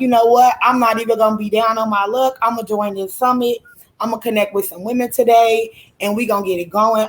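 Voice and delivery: normal talking voice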